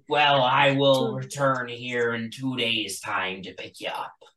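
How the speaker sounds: sea-dog pirate captain voice. Voicing a captain telling the party he'll return: pirate voice. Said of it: "It was just a pirate voice".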